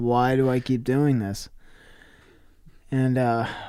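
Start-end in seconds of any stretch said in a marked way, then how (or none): none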